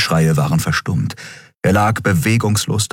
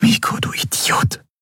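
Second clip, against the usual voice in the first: hushed whisper. A woman speaks to her cold, limp companion; whispered. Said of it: "flüsterte sie".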